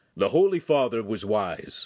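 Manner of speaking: plain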